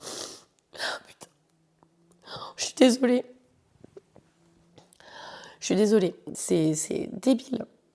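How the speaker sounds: words broken up by tears, crying while talking. Podcaster recalling a little girl looking at her, crying while talking. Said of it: "sans pleurer".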